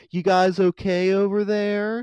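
unsettling slow high voice. Retelling how a man in a rowboat called to the boys: imitating a creepy voice. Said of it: "he was talking so creepily".

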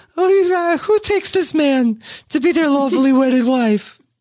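put-on baby-talk voice. Imagining wedding vows spoken in a baby-talk voice. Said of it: "the vows in the baby talk voice".

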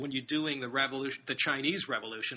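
ordinary talk, nothing marked

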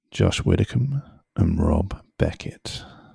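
creaky, sultry, seductive come-hither voice. Asked to say the hosts' names in a sexy voice for the podcast intro. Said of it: "do you want to say our names in a sexy voice?".

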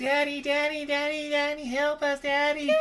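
very high, long, drawn-out wailing cries and screams. Telling a story, the speaker acts out the girls screaming for help. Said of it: "they're just like screaming like".

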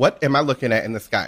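normal talking voice

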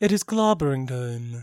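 mild, kindly, gentle, tender delivery. Repeating another speaker's take on a catchphrase: imitating a gentle delivery of the Thing's catchphrase. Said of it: "I love the gentleness you said it with".

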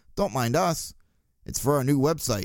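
put-on calm tone. Retelling what a woman in a back seat said after eye contact, imitating a calm reply. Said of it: "said calmly".

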